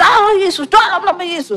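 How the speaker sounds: high, loud shouted delivery.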